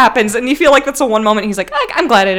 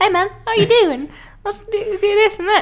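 put-on very high New Zealand accent; 9 semitones higher, 4 dB quieter than usual. Describing a giant rock monster character, imitating his high-pitched Kiwi accent. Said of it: "he's so high-pitched. He's like".

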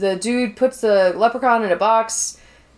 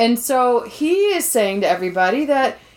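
plain

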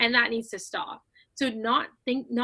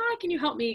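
put-on sweet, nice, polite-sounding voice; 4 semitones higher than usual. Showing the nicer voice one could use to ask for help: put-on nicer voice. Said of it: "a nicer, like, ... kind of voice".

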